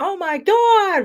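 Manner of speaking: mock, very high, shrill, really loud outburst. Imitating the Italian Long Island mod saying it: really loud. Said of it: "really loud".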